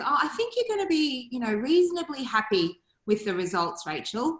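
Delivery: ordinary delivery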